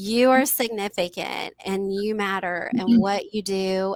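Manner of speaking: plain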